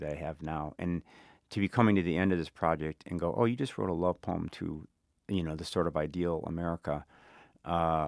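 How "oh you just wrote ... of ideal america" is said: ordinary talk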